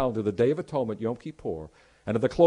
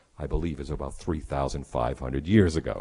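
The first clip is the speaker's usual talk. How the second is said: very low, theatrical, dramatic voice; 12 semitones lower, 4 dB quieter than usual. Retelling a daughter answering a tour guide: imitating a daughter's dramatic lowered voice. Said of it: "paused very dramatically and lowered her voice".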